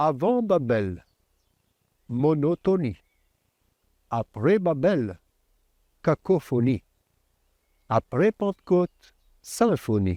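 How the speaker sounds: French spoken with an imitated English accent. Quoting someone's saying in French, imitating his accent: English accent. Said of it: "son accent anglais inimitable que je vais quand même essayer d'imiter".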